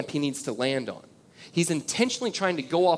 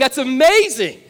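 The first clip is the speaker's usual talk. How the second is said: loud high-pitched screaming; 10 semitones higher, 12 dB louder than usual. Retelling watching a motorcycle jump at home: retelling his own screaming. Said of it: "I'm screaming in my house saying".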